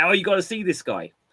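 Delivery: normal talking voice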